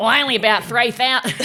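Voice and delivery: put-on Queensland Australian accent. Retelling a father's reply to a very uptight British journalist, use a put-on Queenslander accent. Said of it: "Now he's a Queenslander".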